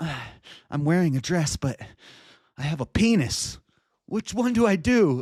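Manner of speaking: acted jittery, unsure, hesitant, nervous voice. Acting out an imagined person choosing a bathroom door: imitating someone nervous. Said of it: "nervously looking from left to right".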